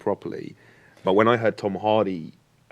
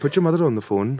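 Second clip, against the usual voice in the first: put-on louder, raised, pitched-up Welsh accent; 7 semitones higher, 5 dB louder than usual. Imitating an actor's line from a film: Tom Hardy's Welsh accent in Locke. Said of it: "you nailed it".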